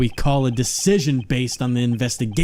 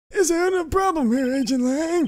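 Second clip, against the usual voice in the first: put-on elderly old man voice, much higher pitch. Voicing a character who questions agent lang: old man voice. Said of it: "I get to do an old man voice".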